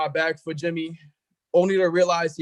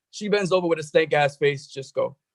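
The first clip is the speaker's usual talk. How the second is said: normal talking voice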